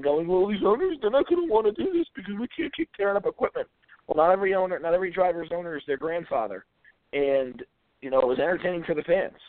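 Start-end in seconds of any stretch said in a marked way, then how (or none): 0.3-3.7 high, teary, sobbing voice. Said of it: "walk away yesterday from the Xfinity race crying".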